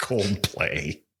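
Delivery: dripping with pure venom, spiteful. Answering a quiz question with the band's name: venomous. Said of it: "wow, that was venomous, the way you said that".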